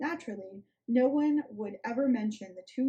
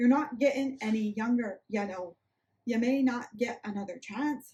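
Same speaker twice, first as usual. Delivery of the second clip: failed, clumsy attempt at a Midwest accent. Attempting a quoted line, in a bad Midwest accent. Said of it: "I can't do Midwest".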